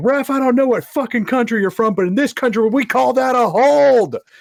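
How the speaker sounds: very high, very loud, shrill shout. At a soccer game, the speaker quotes a friend yelling at the ref, imitating Will shouting. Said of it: "My friend just like shouts at him".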